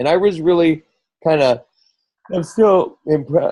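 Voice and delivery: talking through a yawn. Speaker in conversation, yawning mid-sentence. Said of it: "again yawning".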